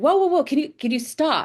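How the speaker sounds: put-on German woman's accent. Retelling a woman who ran into the street to stop the speaker, german accent. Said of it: "In her German accent".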